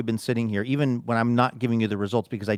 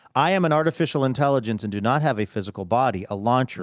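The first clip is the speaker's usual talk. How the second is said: ordinary talk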